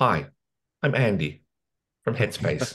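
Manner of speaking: gentle, soft, calm, soothing British meditation-guide voice. Copying how a meditation app's guide introduces himself, as a calming British Andy from Headspace impression. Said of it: "this British guy, is really calming".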